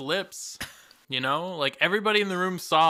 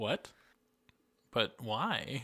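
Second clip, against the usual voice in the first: murmured low, completely deadpan; 5 semitones lower, 10 dB quieter than usual. Speaker recounts a funny movie scene, doing a Ryan Reynolds deadpan impression. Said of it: "his like deadpan delivery".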